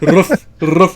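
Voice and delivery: terrible, very loud lion voice impression. Describing someone as a gentle lion, doing a terrible Cowardly Lion impression. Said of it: "my terrible cowardly lion impression".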